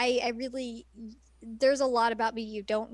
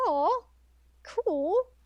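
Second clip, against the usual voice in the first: voice cracks, higher pitch; 6 semitones higher than usual. Recounting his own reply in a conversation, voice cracking. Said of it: "Sorry, my voice cracked".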